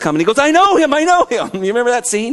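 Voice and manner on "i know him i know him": excited, high-pitched yelling. Retelling a movie scene where Elf sees Santa coming, retelling Elf's excited yell. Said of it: "and he's yelling".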